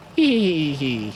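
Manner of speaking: mocking hee-hee giggle, mock laughter.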